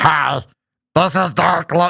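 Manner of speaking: flat, slow, gargled robot voice. Gamer showing how they sounded on old voice chat, Roger Wilco gargling robot voice. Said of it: "sounded like a gargling robot underwater".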